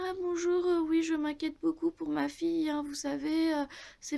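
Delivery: sickly sweet put-on voice. Daughter mimics how her mother talks to people on the phone, mock sweet little voice. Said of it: "faire sa petite gentille voix".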